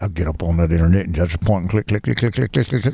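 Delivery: low, mumbled drone with words smeared together. Recalling Hank Hill's mumbling neighbor, the speaker does a mumbling Boomhauer voice. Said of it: "his neighbor that always mumbled".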